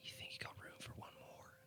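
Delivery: very quiet, close, breathy whisper. Speaking in character, leaning down into a horse's ear: whispering in character. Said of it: "lean down and whisper in his ear".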